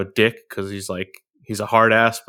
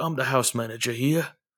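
put-on tough London street accent; 3 semitones higher, 6 dB quieter than usual. Describing the house manager, the speaker quotes him, Jeffrey's tough London accent. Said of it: "British accent of like street tough London guy".

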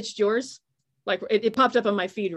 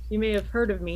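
ordinary talk

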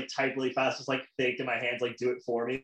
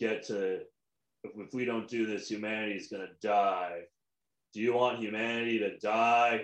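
imitated dry, flat movie-hero delivery, lower; 4 semitones lower than usual. Mocking an actor's recent roles with a dry, flat Keanu Reeves impression. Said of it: "just very dry".

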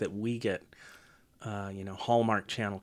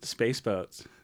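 ordinary delivery

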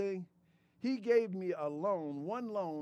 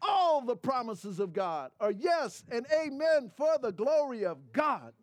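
loud, shouted preacher-style proclamation; 4 semitones higher, 5 dB louder than usual. Quoting scripture while testifying about god, shouting. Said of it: "I'm shouting".

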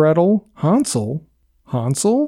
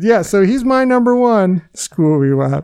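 ordinary delivery

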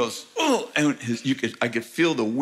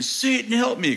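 very high, shrieking scream; 11 semitones higher than usual. Retelling a confrontation with a man he prayed against, retelling the man screaming. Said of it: "Then he started screaming".

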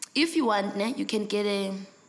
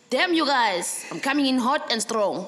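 ordinary talk

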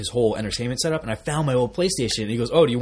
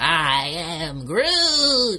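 put-on high, swooping, sing-song baby voice; 5 semitones higher than usual. Chatting with friends about Groot, in a baby Groot voice. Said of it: "That's how he sounds".

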